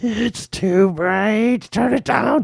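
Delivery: mock very high voice, put-out and upset. Redoing an impression from the night before, the speaker goes mock-upset complaining. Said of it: "you did an impression of me being upset".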